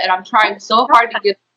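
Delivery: ordinary delivery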